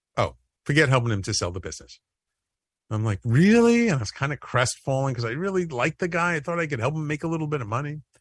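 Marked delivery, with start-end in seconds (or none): 0.2-2.0 mock flat deadpan delivery. Retelling his wife's reaction when he told her at home, imitating wife's deadpan. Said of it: "she used to be very deadpan".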